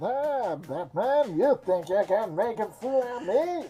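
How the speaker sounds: very slow, soft, hushed character voice, words drawn out. Asked about a Bane impression, the speaker does it again: Bane voice. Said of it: "pretty sure I've done it before".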